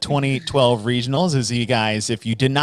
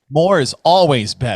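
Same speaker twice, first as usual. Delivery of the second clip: loud, heavily sarcastic, dripping with sarcasm; 2 semitones higher, 4 dB louder than usual. Host mocking those who went really heavy, sarcastic. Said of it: "Hope you guys can hear the sarcasm".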